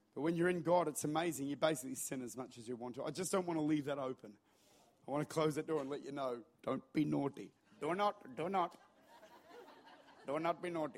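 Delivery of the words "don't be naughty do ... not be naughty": put-on Indian accent. Speaker demonstrating how to deliver a holiness message; indian accent. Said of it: "That's how you deliver a holiness message in an Indian accent".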